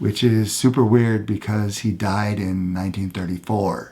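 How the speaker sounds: low, quiet, half-whispered voice. Teacher explaining an educational psychology idea, half-whispering.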